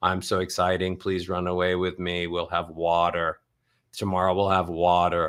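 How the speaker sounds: low, flat monotone stuck on one note. Showing listeners the sound they need to move away from, speak in a monotone. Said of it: "a monotone voice is boring".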